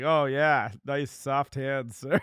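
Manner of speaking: judgmental, mocking, judgy tone. Acting out someone remarking on a man's soft hands, imitating a judgy tone. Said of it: "It's just a judgy tone".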